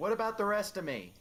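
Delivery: shouted back, pitched very high and loud. Voicing a crewmate answering a call from across the deck: yelling back. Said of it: "Richard's just gonna yell back".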